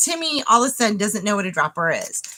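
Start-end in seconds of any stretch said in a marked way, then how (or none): none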